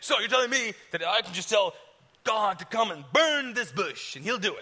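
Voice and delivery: scoffing tone. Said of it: "So I was mocking him".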